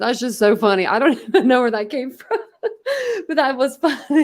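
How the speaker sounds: high voice, laughing through the words. Reacting to something another person said, laughing while talking. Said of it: "once I start laughing".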